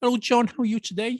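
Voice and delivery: put-on Dutch accent, pitched very high. Demonstrating a better Dutch accent than the other speaker's, Dutch accent. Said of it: "my Dutch accent, I think, is a little bit better".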